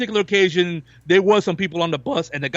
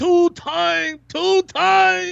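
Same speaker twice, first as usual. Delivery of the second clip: very bad, clumsy put-on voice, very high, very slow; 12 semitones higher than usual. Retelling the passenger trying English: very bad imitation of a bus passenger. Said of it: "a very bad imitation of this guy".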